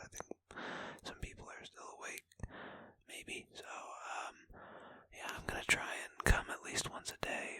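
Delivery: hushed whisper. Speaker switches to whispering because people may still be awake, whispering. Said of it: "I'm gonna start whispering here".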